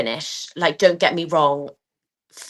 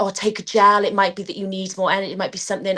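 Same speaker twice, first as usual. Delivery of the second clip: eager, pressing, coach-like urging with imitated screaming; 3 semitones higher than usual. Retelling what everyone shouted at the rower: imitating people screaming. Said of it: "everyone was sort of screaming at me like".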